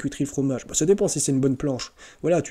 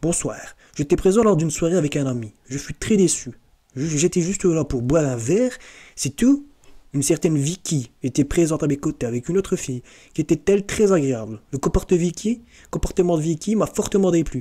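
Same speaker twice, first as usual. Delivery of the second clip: French spoken with a deliberate, put-on Belgian accent; 2 semitones higher than usual. Reading out a person's message about a party, in a put-on belgian french accent. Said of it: "j'ai envie de prendre l'accent belge".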